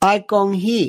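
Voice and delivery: mimicked dialect pronunciation. Quoting a man's exact words for stenographers, imitating dialect pronunciation. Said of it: "He didn't say come, he said con".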